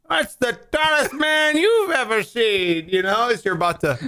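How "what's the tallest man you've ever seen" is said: put-on very high-pitched rocking-chair old man voice. Repeating the other speaker's question back: imitating an old man in a rocking chair. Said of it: "You sound like an old man in a rocking chair".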